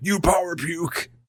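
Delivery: wrestling announcer style. Joking that a line sounds like eighties wrestling: eighties wrestling announcer voice. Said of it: "sounds like an eighties wrestling thing to say".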